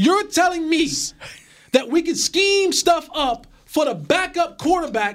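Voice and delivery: full-on, high-pitched hollering. Demanding an answer about scheming for the backup quarterback, hollering. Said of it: "As soon as you quit hollering".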